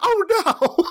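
very high-pitched squeal through a laugh.

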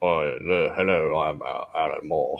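very deep, low, soft voice. Remarking how deep his voice is, then doing a deep Alan Moore impression. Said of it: "his voice is so deep".

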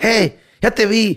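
mock very high, very slow, drawn-out shout. Retelling someone calling a dog by its name, retelling a shout at a dog. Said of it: "hasta que ya le gritaba por su nombre".

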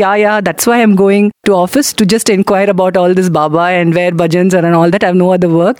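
dry, irritated, mocking, sarcastic "yeah-yeah". Retelling a father's irritated reply to his wife: imitating a sarcastic reply. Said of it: "very sarcastically said".

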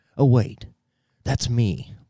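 offhand, private aside to oneself. The speaker acts out Biden muttering quietly to himself. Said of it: "Biden says quietly to himself".

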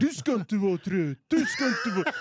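Gothenburg dialect, göteborgska style. Retelling talking to oneself while tired in the car, put-on Gothenburg accent. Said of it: "då började jag bara snacka göteborgska".

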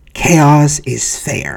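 banal, casual, tossed-off villain voice. Quoting a movie villain's line: Joker impression. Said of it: "I'm trying to do impersonation of the Joker here".

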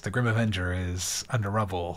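flat monotone, very low and dead flat. Mocking the worst performer's line reading, in Grim Avenger monotone delivery. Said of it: "he talks monotone like this".

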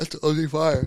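talking through a yawn. Reacting to streaming services adding Korean titles, said mid-yawn. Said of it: "Sorry, I was yawning".

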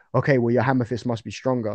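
ordinary delivery

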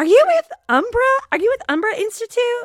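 loud, very high-pitched, thick Texas twang. Retelling being greeted at the airport in Florence: imitating Regina's thick Texas accent. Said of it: "this thick Texas accent".

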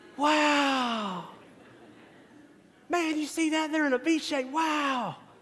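mock little boys' wide-eyed awe, high, drawn-out, excited. Retelling six-year-old boys spotting geese during fielding practice, imitating excited young boys. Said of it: "What do you think the 6-year-old boys are doing".

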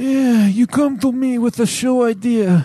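bad, high, raspy put-on impersonation.

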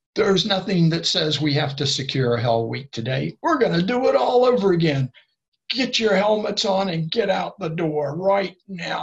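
loud, forceful screaming and yelling. Retelling what an instructor shouted at the tired group after a grueling ordeal. Imitating someone yelling. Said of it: "started screaming and yelling at us".

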